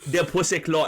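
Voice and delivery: fake thick Jamaican accent. Right after talk of speaking in a Jamaican accent, the speaker tries it: thick Jamaican accent. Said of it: "speaking like a thick Jamaican accent?".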